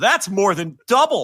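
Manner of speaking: slow, high-pitched, drawn-out sarcastic tone. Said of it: "all sarcastically".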